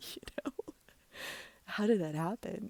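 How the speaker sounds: high voice, words through awkward laughter. Speaker recounting a conversation that went badly, laughing while talking. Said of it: "I'm sorry for laughing".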